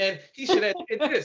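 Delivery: high, swooping, mocking armchair-critic voice.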